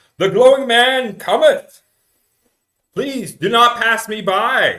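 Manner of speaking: high, loud, booming carnival-barker call.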